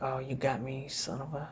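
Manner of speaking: grumbled under breath. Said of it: "He's like".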